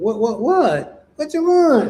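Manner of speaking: high feminine voice with questioning tone. Retelling a conversation in a room, imitating Iman's feminine voice. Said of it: "in that feminine voice".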